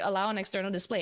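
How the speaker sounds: ordinary talk, nothing marked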